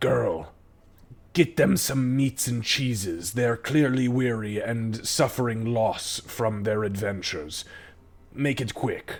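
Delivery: guttural voice rumbling from the chest. Voicing a woman ordering the barmaid to bring food: guttural rumbling voice. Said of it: "guttural, almost like rumbling in her chest".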